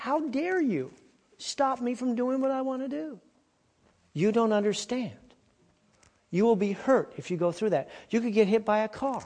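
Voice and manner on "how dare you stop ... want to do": mock high-pitched little boy screaming. Retelling grabbing a little boy back from the street, imitating him screaming. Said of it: "He was screaming".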